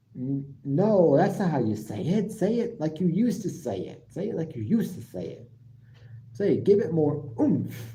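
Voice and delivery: ordinary talk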